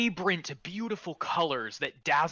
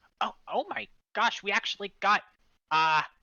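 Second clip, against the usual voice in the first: high, surprised, startled pixie voice blurting out; 5 semitones higher, 3 dB louder than usual. Voicing a surprised pixie meeting a player: surprised pixie voice. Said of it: "one of them goes".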